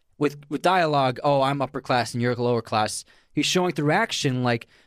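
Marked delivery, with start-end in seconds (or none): none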